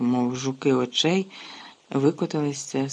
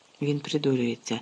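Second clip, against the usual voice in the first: ordinary delivery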